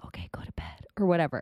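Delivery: nice soft whisper. Speaker demonstrates two kinds of whispers, starting with a nice whisper. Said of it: "You can whisper like this".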